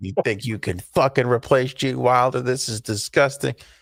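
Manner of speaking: put-on pouty, bratty, sulky, grumpy childish griping. Retelling going into a movie with arms crossed like a child: imitating own childish grumpy self. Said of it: "arms crossed like a baby, like a child".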